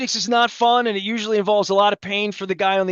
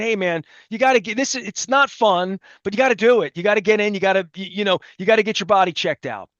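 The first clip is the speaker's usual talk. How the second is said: ordinary talk, nothing marked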